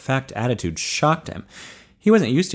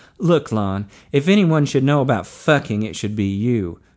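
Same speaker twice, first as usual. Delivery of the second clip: ordinary delivery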